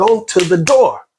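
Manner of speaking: furious, high, angry yell. Speaker recalls telling someone to go to the door while his mother was sick; retelling an angry yell. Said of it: "I'm yelling. I'm I'm I'm really angry".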